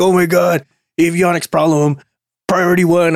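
acted scream. Acting out someone rushing in with an avionics problem, imitating someone screaming. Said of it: "someone can come in there screaming like".

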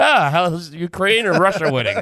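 casual, put-on sports-fan voice. Mocking how another speaker asks about Ukraine, imitating Justin like a sports fan. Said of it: "tunes in like it's a sports game".

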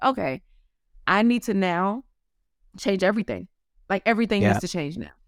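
plain

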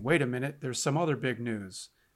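plain

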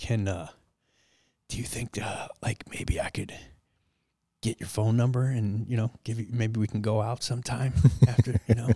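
put-on very quiet voice. Retelling a moment near other passengers, imitating speaking very quietly. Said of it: "So I'm being so quiet about it".

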